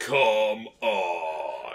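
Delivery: forced super-deep voice, drawn out, "on" stretched. Imitating how Zero says it in Mega Man X7: Zero's super deep voice. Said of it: "way too hard to have this really super deep voice".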